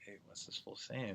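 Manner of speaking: acted-out whisper. Describing asking a teammate to translate the coach, retelling a whisper. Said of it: "like whisper".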